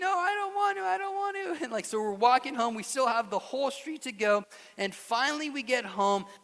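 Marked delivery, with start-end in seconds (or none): 0.0-1.6 put-on very high, wailing child's voice in a tantrum. Retelling a child being carried home: imitating a screaming child. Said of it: "he's kicking and screaming, like".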